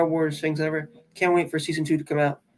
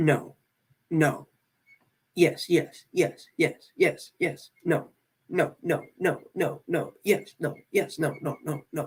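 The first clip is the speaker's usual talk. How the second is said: very slow, drawn-out robotic voice; 3 dB quieter than usual. Imitating a character from The Mandalorian season three, in a robot-like voice. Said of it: "He did have a robot like voice".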